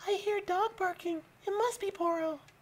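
put-on, very high little girl voice. Hearing a dog barking late at night, speaking in a little girl voice. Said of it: "the return of the little girl voice".

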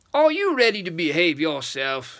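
speaking in a low rumble. Holding the witch he has snatched up, he addresses her, rumbling. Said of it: "he rumbled".

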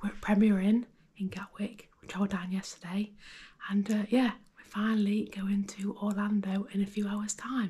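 hushed whisper. At 5:30 in the morning, opening a travel-day video, whispering. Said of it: "We're whispering because it's currently 5:30".

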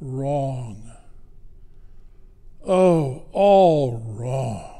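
mock, very slow, drawn-out, disdainful sighing tone. Retelling a teenager criticizing her little sister's ornament: retelling a sigh. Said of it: "the teenager sighed".

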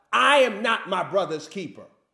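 put-on irritated sarcastic voice. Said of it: "Imagine he's telling God".

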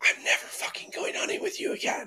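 hushed whisper, under the breath. Retelling a hunting trip, quoting what his companion whispered halfway down: retelling a whisper. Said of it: "He looks at me and whispers".

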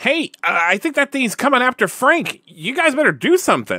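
loud, very high shout. As the slime inches towards Frank in the game, warn the others, yelling as Sonic. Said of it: "And Sonic yells".

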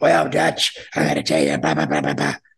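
very low, rough, creaky, oddball voice. Retelling a phone call from a con man: imitating Larry Burton's weird voice. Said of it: "and he had a weird voice".

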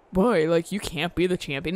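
ordinary talk, nothing marked

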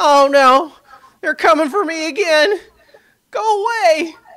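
very high, very loud, frightened, panicked shout. Voicing an unseen figure the players hear from back there: panicked yell from a voice. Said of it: "yells like".

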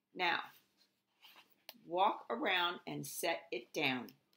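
ordinary delivery, nothing marked

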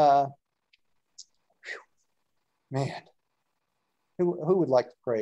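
out of breath. Leader closing the meeting for tonight, asking who will pray, out of breath. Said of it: "I'm out of breath".

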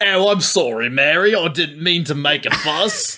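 Cockney, sounding sheepish.

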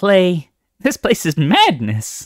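loud exclamation spoken through laughter. Kinkajou speaks to clay in the tumultuous cave, laughing. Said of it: "Kinkajou said with a laugh".

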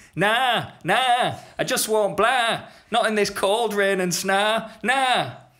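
very high, sheep-like baa-ing bleat. Narrator reading the donkey's answer to Mary, in a donkey voice like a sheep. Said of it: "He sounds a bit like a sheep".

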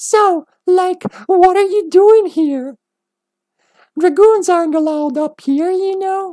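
very high, cute yet creepy voice, pitch way up. Voicing Marcy, the little girl upstairs the group is about to meet: cute, creepy Marcy voice. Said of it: "Gotta give her a cute, creepy voice".

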